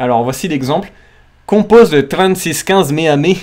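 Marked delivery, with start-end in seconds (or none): 1.5-3.4 Quebec French accent. Giving an example phrase for listeners to guess the game, Quebec French accent. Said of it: "avec l'accent québécois".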